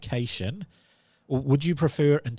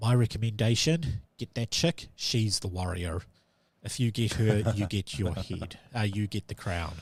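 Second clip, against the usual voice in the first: secretive, low, hushed stage whisper, close to the ear; 3 semitones lower, 4 dB quieter than usual. A character sticks his head close to yours and half-whispers in your ear. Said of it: "he whispers in your ear".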